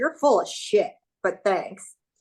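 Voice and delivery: light, slightly sarcastic, dismissive tone. Retelling a reply to a guy who praised her: retelling own sarcastic reply. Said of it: "so I'm a little sarcastic".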